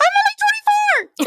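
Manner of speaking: even start, climbing very high at the end. Show how she always talks, imitating Danielle Davis, calm then real high at the end. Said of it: "starts off calm and goes real high at the end".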